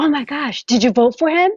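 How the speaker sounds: excited, eager gushing. Retelling what a lady asked after the contest: imitating her excitement. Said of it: "And she's like all excited".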